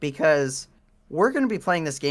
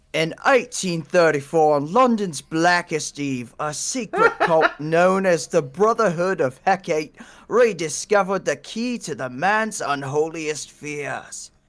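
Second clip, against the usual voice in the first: loose, put-on, sort-of Cockney accent. Speaker reading a dramatic story intro aloud, in a put-on Cockney accent. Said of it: "You need some sort of Cockney accent".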